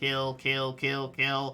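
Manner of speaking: mechanical robotic voice. Game master voices an enemy slashing a player's character, in a robotic voice. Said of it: "Just this robotic voice again and again".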